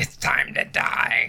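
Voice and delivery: slow, whispered demonic voice. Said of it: "speak in a demonic voice".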